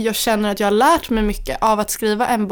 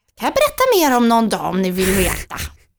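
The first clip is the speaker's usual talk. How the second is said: put-on fairytale witch voice with swooping pitch. Talking about a new book, the speaker offers to tell more, witch voice. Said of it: "vilken trollpacka röst".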